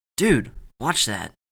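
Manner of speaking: stage whisper, loud. Narrator voicing a boy speaking to another boy, in a loud whisper. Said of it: "said in a loud whisper".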